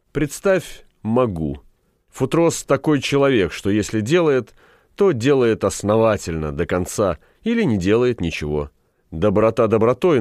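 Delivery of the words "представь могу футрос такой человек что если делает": usual speaking voice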